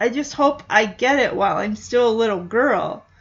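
ordinary delivery

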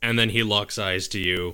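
normal talking voice

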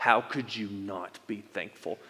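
acted scolding voice of a parent. Showing how a scolding parent might say the line: mock scolding tone. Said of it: "in this tone of voice".

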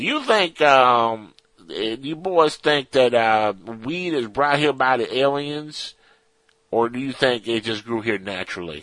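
put-on Texan accent, hard to follow. Reading a listener's question from Texas to the hosts, in a Texan accent. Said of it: "try doing that without an accent so I can understand".

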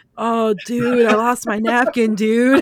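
laid-back, kicked-back surfer dude voice. Recalling a character's line that sounded like a movie dude: Ted Theodore Logan impression. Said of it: "talking like freaking what Bill or Ted".

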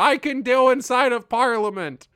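gleeful, excited outburst, high and loud. Retelling an excited text sent in the morning: imitating own gleeful excitement. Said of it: "gleefully excited text to Tara".

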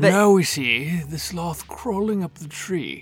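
documentary narrator voice in wildlife film style. Asked to redo a description as a nature narrator: David Attenborough voice. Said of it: "in a David Attenborough voice".

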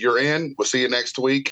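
ordinary talk

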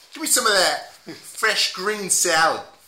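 put-on Boston accent, laid on thick. Playing a customer ordering food with a sandwich, in a boston accent. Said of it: "If I was to say Boston accent".

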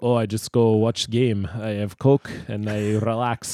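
put-on Russian accent. Joking about him relaxing with a Coke, overdone GoldenEye Russian accent. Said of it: "GoldenEye Russian impression, like a Bond villain".

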